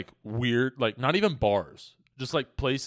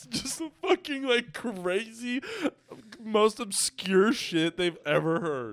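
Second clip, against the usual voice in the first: very high-pitched squeal, laughing to tears; 10 semitones higher, 3 dB quieter than usual. Speaker imagining the obscure things they'd say, crying with laughter. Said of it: "I'm fucking crying".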